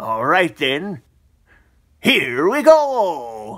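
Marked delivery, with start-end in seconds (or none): 2.0-3.6 high, swooping, cheery video-game cartoon voice. Kicking off a match before checking today's opponent: Mario impression. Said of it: "That was my Mario impression".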